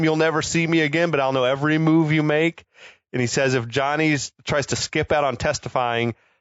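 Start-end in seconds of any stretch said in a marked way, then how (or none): none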